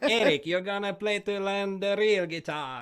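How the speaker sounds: put-on light Spanish accent, high and loud. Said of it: "like this little [name] accent".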